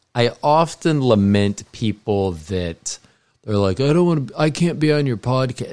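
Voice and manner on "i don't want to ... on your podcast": put-on stoner voice, pitched up. Imitating people declining to be on the podcast: stoner voice. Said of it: "that sounds like a stoner".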